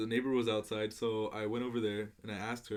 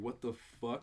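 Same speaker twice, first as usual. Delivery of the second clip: put-on laughing while talking, quieter; 5 dB quieter than usual. Retelling own reaction to hearing about the murders: retelling own laughing. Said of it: "I literally laughed, like".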